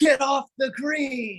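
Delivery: put-on very high, drawn-out angry holler. Retelling a golf story where a man behind screams at the group: imitating a man screaming. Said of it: "has his hands up in the air and screams".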